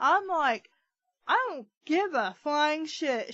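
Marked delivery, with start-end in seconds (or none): 1.3-3.3 fed-up ranting outburst, mild and held in check. Retelling a rant to a coworker at the top of the lungs: retelling own loud rant. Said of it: "I was ranting at the top of my lungs".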